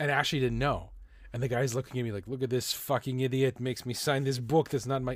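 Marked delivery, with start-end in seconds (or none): 2.3-5.2 put-on French-Canadian Quebec accent. Retelling what a chef seemed to think of him: Quebec accent. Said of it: "that's a Quebec accent".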